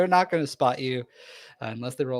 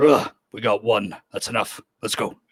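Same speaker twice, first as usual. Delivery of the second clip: monster voice for an orc, in character; 2 semitones lower than usual. A game master voices an orc the players overhear in a city, orc voice. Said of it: "the orc's voice as he goes".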